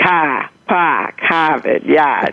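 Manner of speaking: slow Boston accent, dropping every R. Showing how a Boston accent drops its R's: Boston accent without the R's. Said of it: "I don't pronounce the R's".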